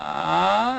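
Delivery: creaky vocal fry on ah. Explaining what a creaky voice is, then showing it: creaky 'ah' sound. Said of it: "a creaky voice is kind of that ah".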